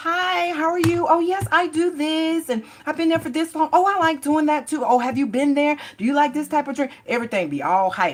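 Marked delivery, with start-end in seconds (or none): 0.0-6.9 falsely sweet voice, very high and loud. Imitating someone greeting a person on first meeting: imitating a falsely sweet voice. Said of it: "that falseness of that voice".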